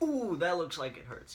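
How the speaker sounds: mocking wrestling ringside commentator call. Mocking a wrestling commentator's line: imitating Byron Saxton. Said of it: "It's like".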